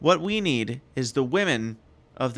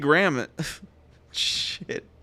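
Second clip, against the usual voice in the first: ordinary talk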